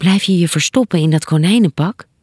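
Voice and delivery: plain reading voice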